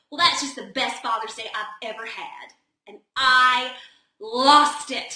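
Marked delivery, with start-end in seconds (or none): 0.1-2.5 put-on, deep-voiced American South accent. Speaker quoting a man who sat down beside them, deep southern accent. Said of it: "with this deep southern accent".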